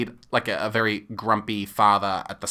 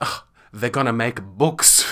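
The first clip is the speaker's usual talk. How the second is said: put-on near stage whisper. Retelling an audience member turning to the person beside them, imitating a stage whisper. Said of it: "almost stage whispers".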